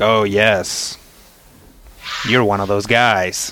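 slow, heavy-handed, knowing, pointed delivery. Voicing a card dealer who recognizes a player: pointed, unsubtle remark. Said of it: "Nice and subtle there, buddy".

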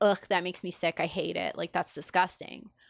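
ordinary talk

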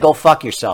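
ordinary delivery

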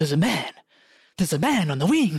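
pitch sweeping up and down, showy. Recalling a scene from a film: William Shatner impression. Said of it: "With William Shatner going".

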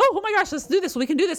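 mock giddy, rattled-off, rushed excited gush, very high. Describing how excitement changes their talking, acting it out mock-excited, fast and high. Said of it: "it comes off usually in a higher tone, because I'm talking very quickly and I get excited. So my notes go up".

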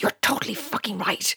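hushed, whispered voice. Reading a story, agreeing with Elliot in the kitchen: whispered. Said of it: "I whispered back".

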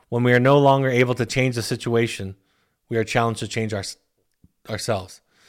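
ordinary talk, nothing marked

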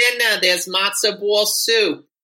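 loud, motherly, hollered yell.

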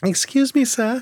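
put-on very high-pitched Victorian orphan boy voice. Joking about needing glasses: Charles Dickens orphan voice. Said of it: "some kind of, uh, Charles Dickens novel".

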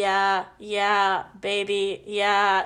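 flat, very slow, level, machine-like robot voice. Joking about hearing him from behind, doing a Stephen Hawking robot voice. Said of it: "That robot voice he types out".

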